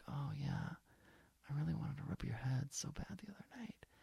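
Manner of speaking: soft, breathy, silly whisper. Recounting what they told their partner while kissing, re-enacting their own whisper. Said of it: "Why do people do that dumb whisper?".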